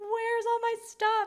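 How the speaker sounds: play-acted crying, very high, drawn-out and pleading. Retelling calling the husband after the photos vanished: imitating own past crying. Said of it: "I'm, like, crying".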